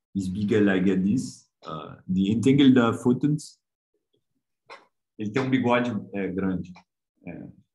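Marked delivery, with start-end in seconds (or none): 0.1-3.5 put-on slow, drawn-out, thick, strong French accent. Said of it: "foi com o maior sotaquezão forte".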